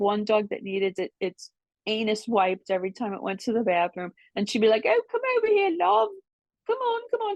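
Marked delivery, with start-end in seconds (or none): 4.9-7.4 very high-pitched put-on English accent. Mimicking a woman with dogs calling one over, in her English accent. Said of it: "She had this English accent".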